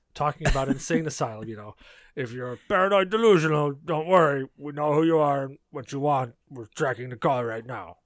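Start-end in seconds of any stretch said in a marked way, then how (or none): 2.2-7.9 cartoon character voice. Speaker recalls what their boss heard when calling them: Strong Bad voice. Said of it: "me doing the Strong Bad voice".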